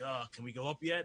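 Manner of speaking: irritated, pissed-off, fed-up tone. Retelling a scene where clones wait under the bridge: imitating pissed-off clones. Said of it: "they're all pissed off".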